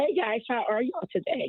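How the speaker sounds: voice full of joy. A radio caller greeting the hosts on air, with a joyful voice. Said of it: "listen to the joy in that voice".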